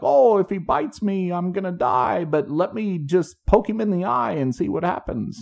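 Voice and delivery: high, laid-on, fake Australian accent. Retelling a man catching a lizard, in a put-on Australian accent. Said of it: "I didn't understand a word of that".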